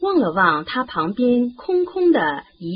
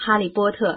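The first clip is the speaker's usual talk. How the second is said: plain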